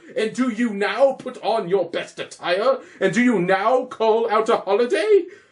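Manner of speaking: stern, high, declamatory Shakespearean-style scolding. Playing a roman tribune scolding celebrating commoners, reproachful scolding of commoners. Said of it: "Wherefore rejoice? What conquest brings he home? What what tributes follow him to Rome? To grace in captive bonds his chariot's wheels? You block your stones, you worse than senseless sayings, O you hard hearts, you cruel men of Rome!".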